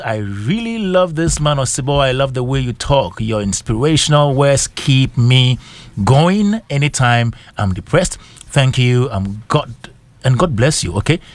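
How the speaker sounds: ordinary delivery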